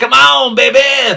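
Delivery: loud, high-pitched call in wrestling-promo style. Repeating the line to show how it sounded: Chris Jericho voice. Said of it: "it sounded kinda like Chris Jericho".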